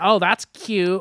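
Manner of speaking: put-on smug, pretentious voice. Mocking a pretentious musician's attitude: imitating him, mock pretentious. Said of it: "him just being like".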